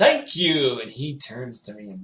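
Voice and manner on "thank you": very loud, big shouted call-out. Retelling calling out to an actor on stage: retelling a yell. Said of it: "So I yell".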